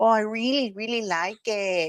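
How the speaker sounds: slow, drawn-out, put-on Spanish accent. Retelling an interview answer, imitating Meghan's put-on accent. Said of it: "she's talking like this".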